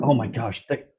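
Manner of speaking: thrilled. Voicing a character who gets her lost stone back: excited. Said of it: "she's so excited about it".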